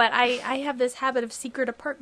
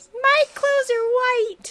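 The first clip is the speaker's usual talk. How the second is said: very high, loud, overwrought heroic wail; 13 semitones higher, 5 dB louder than usual. Doing Star Wars impressions for fun, a Luke impression. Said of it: "That was my Luke impression".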